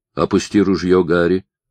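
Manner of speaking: plain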